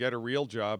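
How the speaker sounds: usual speaking voice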